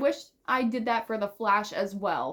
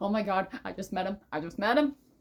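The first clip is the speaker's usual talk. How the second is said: put-on nervous, panicky freak-out. Describing meeting someone, the speaker acts out a past nervous freak-out. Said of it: "the nervousness gets kicked back in".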